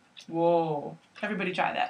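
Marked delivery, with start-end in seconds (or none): 0.3-1.0 nice, deep, low-voiced "whoa". Teaching how to get horses to stop: a deep 'whoa'. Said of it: "in a nice deep voice, like this".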